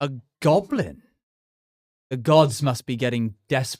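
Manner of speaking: reverberating voice. Voicing a hidden being that mocks the party: reverberating voice. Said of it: "hear this voice reverberate".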